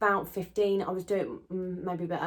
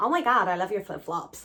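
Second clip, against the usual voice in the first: bad, horrific put-on American accent; 3 dB louder than usual. Retelling what a lady in the hotel lift said, in a bad american accent. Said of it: "Sorry for my horrific American accent".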